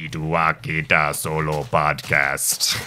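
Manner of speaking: put-on alien voice. Joking that a phrase sounds like Star Wars: Jabba the Hutt voice. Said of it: "Terrible impression of Jabba the Hutt".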